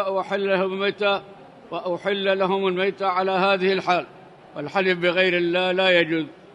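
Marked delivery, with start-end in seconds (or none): none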